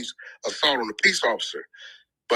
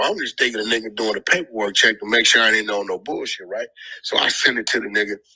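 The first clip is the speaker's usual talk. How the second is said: usual speaking voice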